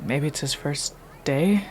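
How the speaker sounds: quiet, hushed whisper. Speaker acting out a remark about a man rehearsing what to say, quiet whisper. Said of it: "I'm gonna like whisper quietly".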